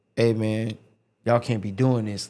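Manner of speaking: put-on aggressive tone. Retelling what a man in the stands said: imitating an aggressive tone. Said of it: "but he said in an aggressive tone".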